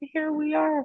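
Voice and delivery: high, laughing delight. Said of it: "And I just laugh and I go".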